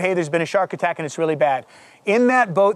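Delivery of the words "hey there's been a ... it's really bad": usual speaking voice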